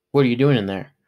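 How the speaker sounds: plain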